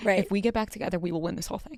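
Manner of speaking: guilty, hushed stage half-whisper. Voicing what the two reality show contestants should say: half-whispering. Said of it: "I'm whispering that".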